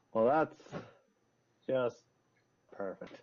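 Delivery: flat and uninterested. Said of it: "You don't sound very enthusiastic about it".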